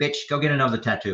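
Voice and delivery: sassy woman's voice, full of attitude. Retelling what a recorded female voice said to an investigator: imitating a female voice with attitude. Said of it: "this female voice had an attitude".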